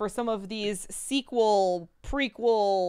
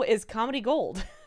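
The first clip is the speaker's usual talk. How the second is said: ordinary delivery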